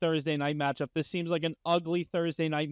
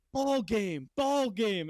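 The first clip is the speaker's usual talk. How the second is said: put-on very slow heckling jeer, screaming; 5 semitones higher than usual. Retelling a fan screaming at a rival fan: imitating a fan screaming. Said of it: "screaming at P F T".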